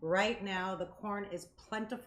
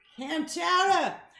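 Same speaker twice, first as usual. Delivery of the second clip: very loud, high, terrible put-on Boston accent; 9 semitones higher, 11 dB louder than usual. Joking about clam chowder, offering to speak in an accent: terrible Boston accent. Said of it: "horrible Boston accent".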